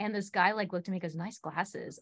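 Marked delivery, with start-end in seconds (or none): 1.1-2.0 laid-on suggestive, sexual tone. Retelling a stranger's remark at a grocery store: imitating a sexual tone. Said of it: "in, like, a sexual tone".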